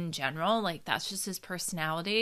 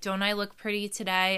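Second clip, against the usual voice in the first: ordinary delivery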